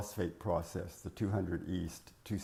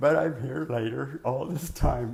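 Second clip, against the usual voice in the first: high, loud voice cracking. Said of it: "my voice is cracking on me".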